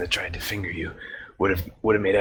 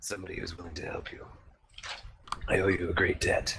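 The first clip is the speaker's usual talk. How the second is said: soft, rasping, mysterious voice; 6 dB quieter than usual. Voicing a figure that speaks to Voltron from the gloom, in a raspy voice. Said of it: "a raspy voice speaks to you from the gloom".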